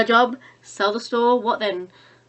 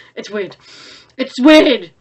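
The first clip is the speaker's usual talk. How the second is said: normal talking voice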